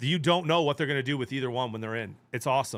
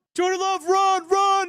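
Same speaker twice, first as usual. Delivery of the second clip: imitated scream, higher and louder; 7 dB louder than usual. Retelling what a lineman screamed at his quarterback: imitating a lineman screaming. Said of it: "he's literally screaming".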